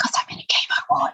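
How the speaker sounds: high, breathy, hushed whisper.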